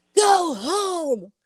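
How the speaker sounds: put-on scary voice. Retelling turning around to scare him off while walking home, put-on scary voice. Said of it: "I had to get my scary voice on".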